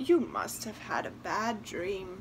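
usual speaking voice

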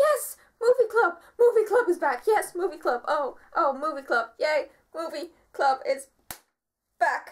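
put-on, bursting with excited cheers. Speaker recalls how they reacted to Movie Club returning, acting out past excitement. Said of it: "My excitement for Movie Club kind of went like".

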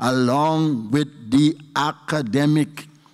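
very slow, deliberate, spelled-out words. Addressing an audience about training performers alongside academics, said very slowly. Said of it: "let me say this very slowly".

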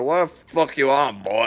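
put-on elderly grandfatherly voice. Retelling the grandpa asking if he was on drugs: imitating Pop's voice. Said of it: "he sounds like this".

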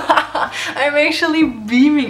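slow, loud, joyful laughter.

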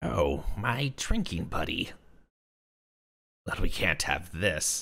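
odd, weird, small creature voice. Retelling a story, voices a creature dressed in a quilt in a weird small creature voice. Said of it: "I need to do this voice. This weird small creature dressed in a quilt".

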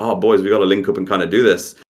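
ordinary talk

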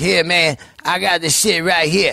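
imitated Creole accent. Speaker quotes a Creole man arriving at a hotel during filming, imitating a Creole accent. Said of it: "I love that accent".

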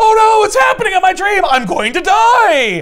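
high-pitched, loud panicked wail.

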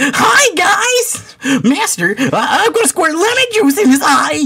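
very high, pestering, annoying talking-sword voice. Voicing the intelligent, extremely annoying lemon-juice sword: annoying talking sword voice. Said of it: "it's just like".

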